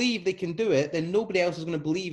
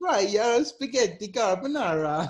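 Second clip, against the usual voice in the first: mock Eastern European accent; 3 semitones higher than usual. Demonstrating a menu pitch on a count of three, in a Borat impression. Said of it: "it sounds like a Borat".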